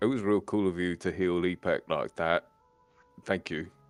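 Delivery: muttered quietly under breath. Speaking in character to the ragman: muttered under his breath. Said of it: "just kinda say under his breath to the ragman".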